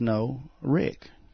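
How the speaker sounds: put-on groggy, low-toned voice. Retelling how a voice answered when addressed as Ricky, imitating a groggy, low voice. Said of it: "in a groggy, low-toned voice".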